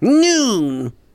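put-on voice, one word stretched out, pitched high. Doing a one-word impression for others to guess: guess-who one-word celebrity impression. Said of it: "guess that's my impression of who".

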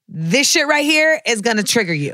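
ordinary talk

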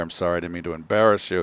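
imitated whisper. Retelling an apology he whispered in the speaker's ear: imitating a whisper. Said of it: "whispered in my ear".

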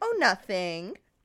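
lilting, sing-song voice. Reading a story aloud, voicing a character playing innocent: sing-song voice. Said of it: "in a sing-song voice".

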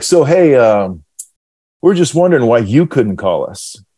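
really sarcastic, needling tone, acted. Retelling a phone call from the assistant coach: imitating a sarcastic tone. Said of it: "real sarcastic talking to me".

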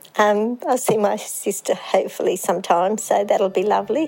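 voice catching, choking up, near tears. Speaking of hopefully seeing a sister again, the speaker is about to cry. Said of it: "Whoops, I'm going to cry".

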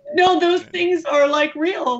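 on the verge of tears. Talking about friends they no longer speak with, on the verge of tears. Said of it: "I'm gonna cry".

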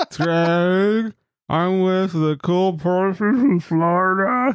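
put-on very high, tipsy, drawn-out drunk cartoon voice. Leaving a voicemail for Craig, in a drunk Barney voice. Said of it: "You sound like a drunk Sesame Street character".

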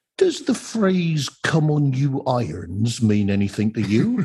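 put-on accent from Devon. Retelling what a nurse asked on the phone, in a fake Devon accent. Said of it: "That's just a cod Devonian accent".

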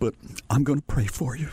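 put-on crying voice. Retelling a radio call from an elderly woman listener: imitating a caller crying. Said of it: "i just heard you on the radio and i'm crying".

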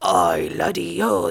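mock pirate voice, deep. Retelling what a guy said on Halloween, doing a pirate accent. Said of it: "and then he's doing the accent".

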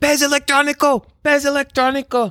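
very high-pitched yell. Telling a fishing story, the speaker imitates a man yelling at them. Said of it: "He slaps my hand and yells".

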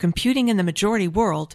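ordinary talk

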